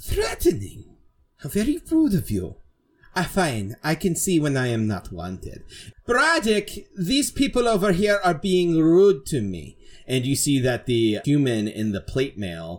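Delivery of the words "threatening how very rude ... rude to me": character voice, pitched up, swooping and animated. Voicing a Tabaxi character introducing herself to the group: Silence of Starlight voice. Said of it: "My name is Silence of Starlight".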